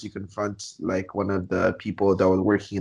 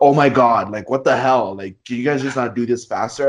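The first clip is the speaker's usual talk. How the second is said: put-on yelling voice; 3 semitones higher, 4 dB louder than usual. Speaker recounts a customer complaining that the manager wasn't there: retelling a customer's yell. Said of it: "the time that you're spending yelling at this guy".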